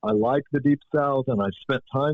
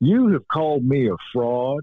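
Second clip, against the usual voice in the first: put-on accent of the Southern US; 3 dB louder than usual. Retelling what Calvin Parker told Klass at a TV studio: Calvin Parker's Southern accent. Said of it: "And I used the accent".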